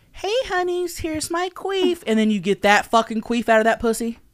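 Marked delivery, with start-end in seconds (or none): 0.2-2.0 put-on wholesome, sweet-sounding girl voice, pitched up. Repeating a line from a played clip: imitating a sweet-sounding wholesome girl. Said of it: "wholesome, sweet-sounding girl".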